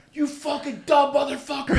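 very high, shrill, all-out furious screaming yell. The speaker retells what he screamed at someone at the end, retelling a yell. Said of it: "I'm fucking yelling at him".

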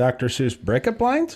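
rising, question-like lilt on "lines". Told to upturn it at the end, speaker repeats the title: rise on 'lines'. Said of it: "Upturn it at the end".

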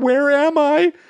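very high-pitched, tearful, sobbing voice. Retelling a movie scene to a friend, acting out a man crying in a bathroom; imitating someone crying. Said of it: "And he starts screaming".

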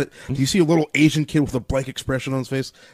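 plain

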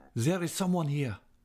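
trembling, unsteady, quivering, high-pitched voice. Entering a dark dressing-room, a man speaks with his back to the door: quivering voice. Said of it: "in a quivering voice".

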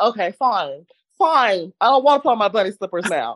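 slow, irritated, grudging tone. Retelling being refused bunny slippers: retelling own irritated words. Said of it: "So I was irritated from that".

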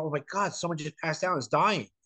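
mock panicky scream, cry of alarm. Describing how she screams over anything, imitating someone screaming. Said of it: "she screams like".

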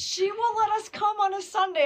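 excited burst. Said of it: "I was so excited".

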